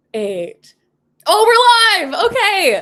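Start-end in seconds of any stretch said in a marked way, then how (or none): 1.3-2.8 shrill, booming, very loud, high excited yell. Starting a live stream as it goes live, yelling loudly. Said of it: "I yelled really loud".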